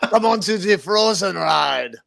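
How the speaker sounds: clumsy put-on French accent. Urging a companion onto the Frozen ride, in a bad French accent. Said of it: "I think I just did a French accent".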